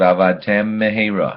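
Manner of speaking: two words slurred together into one. Teaching Hebrew pronunciation, show the improper way, two words run together. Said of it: "Together they sound like this".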